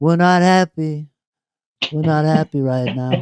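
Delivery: scratchy, rough-edged rasp on every word. Retelling what Brad said to McCauley in the green room: imitating Brad's raspy voice. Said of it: "he had that raspy kind of voice".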